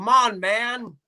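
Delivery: high-pitched angry exclamation. Doing an impression of Joe Biden getting angry: Joe Biden impression, angry. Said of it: "he gets angry and he kinda goes".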